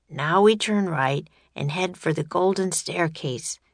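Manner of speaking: ordinary delivery, nothing marked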